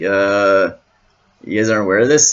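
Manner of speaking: put-on obvious, "duh" attitude. Retelling Joseph's reply about interpreters, imitating a duh sort of tone. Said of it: "He says it in such a, like, duh sort of way".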